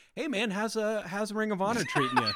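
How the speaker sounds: laid-back, easygoing tone, voice lifted. Imagining a phone call to a wrestler: Matt Jackson impression. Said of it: "surprisingly good Matt Jackson impression".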